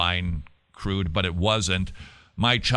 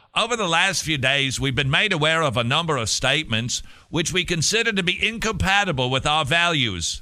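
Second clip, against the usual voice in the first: higher, mock British accent. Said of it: "I hear more Australia".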